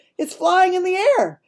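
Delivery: high, loud excited shout. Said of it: "And he says".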